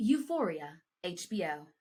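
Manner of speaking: slow, formal awards-night announcer voice. Practicing reading drama series and networks as if announcing, formal announcer voice. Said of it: "I'm gonna practice reading it as if I'm announcing".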